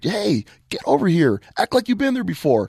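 very high, swooping, shouted yell. A coach retells calling a celebrating player back from the sideline, retelling a yell. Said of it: "And I'm yelling down there".

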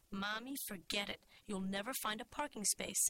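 plain reading voice

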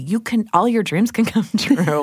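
laughing and giggling through the words.

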